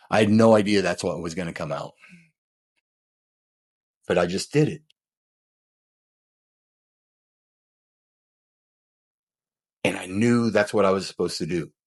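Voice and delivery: emotional, choking up, near tears. Retelling feeling proud after sharing a life story: emotional, choking up. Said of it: "I'm getting emotional talking about it".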